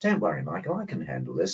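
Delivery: mock unruffled, composed, cool, calm delivery. Retelling a doctor's answer to you before a journalist's question, retelling a cool, calm reply. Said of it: "very coolly and very calmly".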